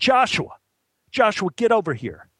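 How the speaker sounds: acted-out bossy call, high-pitched yell. Retelling how an AD called a teenager over before a crowd, retelling a yell. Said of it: "The AD yelled out again".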